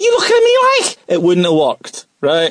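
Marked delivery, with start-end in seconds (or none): 0.0-1.0 put-on Scouse accent, higher pitched. Joking how a famous movie line would sound: Scouse accent. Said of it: "if Robert De Niro was to look into the mirror and go".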